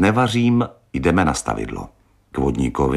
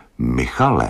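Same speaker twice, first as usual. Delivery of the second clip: stern, strict and severe. A woman answers the man as he plans a call, stern. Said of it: "řekla přísně".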